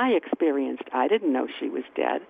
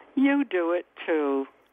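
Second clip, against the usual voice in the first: mock-teasing tone, delivered slower. Speaker recounts a half-asleep dream, retelling her teasing remark.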